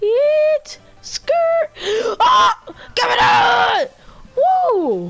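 excited voice cracking high in loud yells. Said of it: "My voice is cracking".

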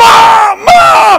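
shrill, frantic, very high, loud desperate scream. Retelling running back to the yard calling for Mom, retelling a scream. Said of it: "run screaming back to our yard".

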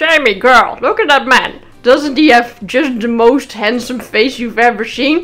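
put-on loud, elderly grandfather voice. Retelling what her new friend said to her about a man, imitating Frank. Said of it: "Frank talks like this".

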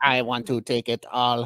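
android-like alien voice. Joking on a podcast, doing the voice imagined for the Greys: Grey alien voice. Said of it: "I always imagine a voice like this for the Greys".

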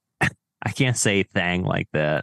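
plain

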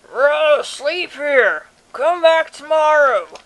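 sleepy, drowsy voice calling out. After loud knocking, someone inside calls through the small door: sleepy voice calling out. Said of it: "A sleepy voice calls out".

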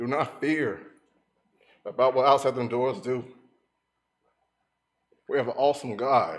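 emotional, tearful crying with joy. Speaking to listeners, the speaker is emotional and crying. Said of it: "I might get a little emotional".

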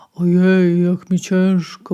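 slow, heavy, drawn-out grumbling. Narrator reads the wolf just after waking up, grumbled. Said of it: "burknął wilk".

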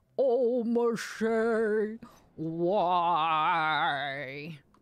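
giant's voice in pain. On stream, answering a viewer's request, the speaker does a pained giant voice. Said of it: "pained voice of the giant".

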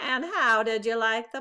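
ordinary delivery, nothing marked

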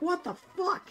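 mock crowd scream. Speaker recounts everyone at the Dragon Ball Z movie screaming, retelling a scream. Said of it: "everyone was like screaming".

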